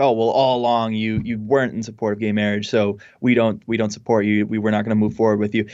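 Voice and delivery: ordinary talk, nothing marked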